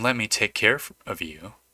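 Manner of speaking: quiet half-whispering voice. Narrator voices the apartment speaking to the listener: half-whispering as the apartment. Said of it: "the apartment whispers to you".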